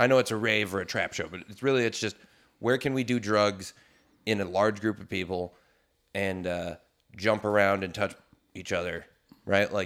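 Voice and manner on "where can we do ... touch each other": plain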